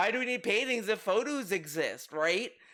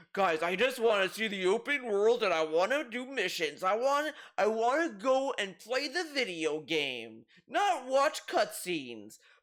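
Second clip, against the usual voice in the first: scornful, derisive mock game-streamer voice. Retelling what the streamer keeps saying about cutscenes: mocking imitation of the streamer. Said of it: "this dude is so fixated on".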